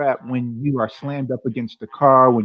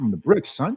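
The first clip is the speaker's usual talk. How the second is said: casual slangy tone, quieter; 3 dB quieter than usual. Retelling how he answered someone asking where he's from, retelling a slangy reply. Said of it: "I said it in a way that was um, kind of slangy".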